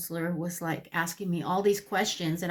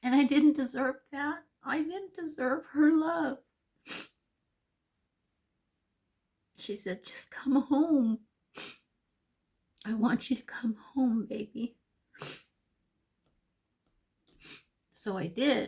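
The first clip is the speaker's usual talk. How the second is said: high, tearful crying, voice cracking and breaking; 7 semitones higher than usual. Recalling being asked to come home, crying, voice breaking. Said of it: "I'm crying and I'm trying to look beautiful".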